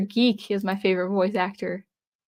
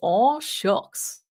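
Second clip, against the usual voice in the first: silly cartoon dog character voice; 3 semitones higher than usual. Showing the stream chat the Goofy voice they asked for, Goofy voice. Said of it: "That's my goofy voice".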